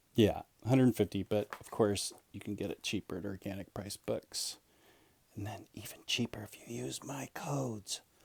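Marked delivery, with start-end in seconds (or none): 1.5-8.0 soft, hushed, very quiet whisper. An aside to viewers while presenting a book: whispering. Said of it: "I don't know why I'm whispering that".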